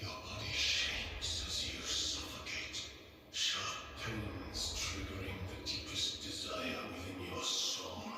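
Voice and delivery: creepy, eerie, unsettling delivery. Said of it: "creepy voice".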